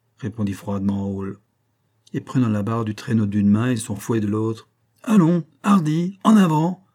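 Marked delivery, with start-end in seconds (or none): 5.0-6.8 high, loud, drawn-out carrying shout. A narrator reads a sled driver urging his team forward, shouted.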